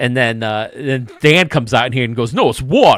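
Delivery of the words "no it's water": loud put-on British accent. Retelling how Dan repeated the line: put-on British accent. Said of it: "I always thought the British accent".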